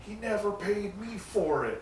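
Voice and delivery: high, mad outburst fired off. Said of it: "he just gets so mad".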